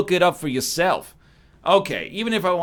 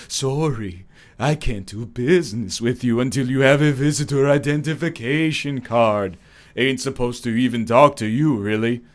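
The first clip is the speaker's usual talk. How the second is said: eerie, low, spectral ghostly voice; 5 semitones lower than usual. Narrating a story, voice the disembodied voice answering the newcomer, in a ghostly voice. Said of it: "a ghostly voice comes out of nowhere".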